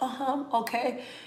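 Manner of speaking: high, would-be serious, straight-faced delivery. Retelling a counselor on video trying to stay serious: imitating counselor trying to sound serious. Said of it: "she be trying to be serious".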